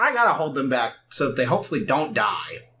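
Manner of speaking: ordinary talk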